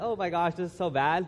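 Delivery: ordinary delivery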